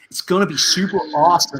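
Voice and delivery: badly faked, terrible put-on American accent. Signing off to viewers in a terrible put-on american accent. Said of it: "That was a terrible American accent".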